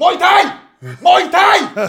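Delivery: very high, shrill, full-volume, drawn-out scream. Retelling how a man in a suit screamed at a nightclub: imitating someone screaming. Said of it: "skriker han så här".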